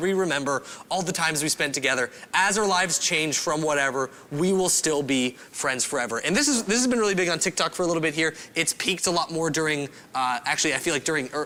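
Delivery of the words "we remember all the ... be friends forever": usual speaking voice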